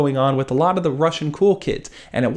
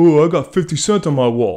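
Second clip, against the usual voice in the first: dropped, lowered, deeper voice; 4 dB louder than usual. Retelling what he responded when asked whose pictures he had, deeper voice for his reply. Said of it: "I'm making his voice deeper for some reason".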